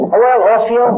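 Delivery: put-on drawled southern accent. Retelling what Dick told him: imitating Dick's southern drawl. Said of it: "in his southern drawl".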